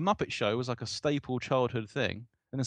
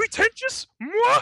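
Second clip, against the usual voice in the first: very high, loud, squeaky puppet voice; 8 dB louder than usual. Chatting about Muppets, in a Yoda-like voice. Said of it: "how much that sounds like Yoda".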